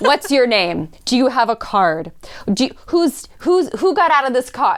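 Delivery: put-on Russian-accented speech. Retelling how a friend arrived at a motel: imitating Anna's Russian accent. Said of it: "beautiful Russian accent".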